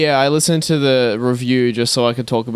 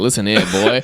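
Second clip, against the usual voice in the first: 1940s salesman voice with vintage pitchman patter; 4 semitones lower than usual. Mimicking the other person's smooth sales pitch: 1940s cigarette salesman voice. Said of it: "a nineteen forties guy trying to sell cigarettes to a kid".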